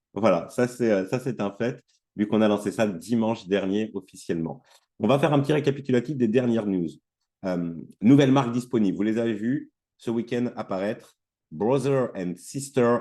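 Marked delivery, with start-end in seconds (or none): 11.5-12.9 "brother and sister" said in an English accent. Host announcing newly available brands, saying a brand name in an english accent. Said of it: "avec mon super accent anglais".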